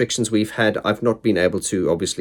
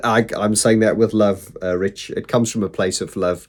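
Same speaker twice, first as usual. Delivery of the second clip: ordinary delivery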